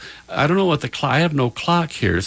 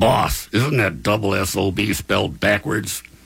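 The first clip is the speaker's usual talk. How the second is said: put-on crotchety old man's voice, creaky and cranky; 4 semitones lower than usual. Quoting a remembered man's remark, imitating his creaky, cranky old voice. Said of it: "in his creaky, cranky old voice saying".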